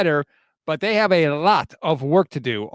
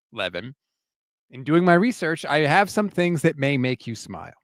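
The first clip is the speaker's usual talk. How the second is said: usual speaking voice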